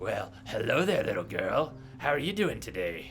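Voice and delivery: put-on creepy character voice. Speaker mimics a character who just greeted them, in a creepy Samuel voice. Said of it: "that's not a creepy voice".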